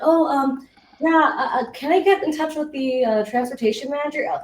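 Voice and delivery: very loud, halting, unsure, stumbling voice. Retelling cold-calling advice, the speaker acts out a caller lacking confidence, mock-hesitant. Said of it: "with that hesitance and like lack of confidence".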